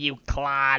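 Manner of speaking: imitated cartoon alien voice. Repeating another player's insult: Peridot voice. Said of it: "I was trying to be Peridot-like".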